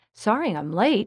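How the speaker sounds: ordinary delivery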